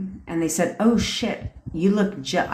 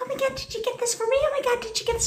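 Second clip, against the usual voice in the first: put-on very high, childlike baby voice; 4 dB quieter than usual. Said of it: "she talks like this".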